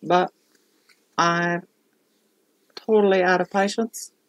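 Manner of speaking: playful put-on Australian accent, for fun. Out of patience and entertaining oneself: put-on australian accent. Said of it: "I'm using an Australian accent".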